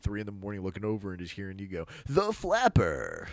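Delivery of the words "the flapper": overconfident, loud, pitched-up TV sales voice. Teasing the other speaker by repeating their word in an infomercial sales voice. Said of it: "trying to sell like an infomercial".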